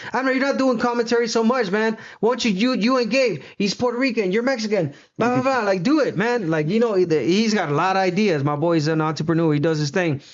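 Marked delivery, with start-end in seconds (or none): 0.1-6.5 high, hyped-up excited voice. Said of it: "He's like".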